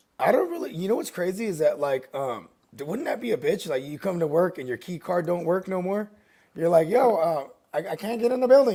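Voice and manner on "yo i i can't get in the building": stammering, halting speech. Acting out a worker whose key card no longer works. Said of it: "he kinda sounds like that".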